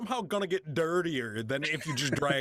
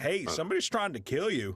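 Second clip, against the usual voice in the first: ordinary delivery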